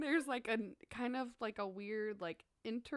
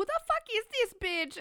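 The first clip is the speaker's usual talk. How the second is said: very high, loud, put-on, vaguely Jamaican accent; 12 semitones higher, 7 dB louder than usual. Retelling a music video scene, imitating the girl's accent. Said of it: "that's, like, her accent".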